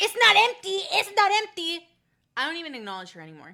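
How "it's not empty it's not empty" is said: very high, very loud, shrill screaming. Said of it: "She starts screaming at the top of her lungs".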